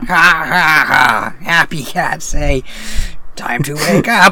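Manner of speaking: loud, booming cartoon villain voice. Talking about the Happy Cat Clock, the speaker does an Aku voice. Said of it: "He's doing his Aku voice".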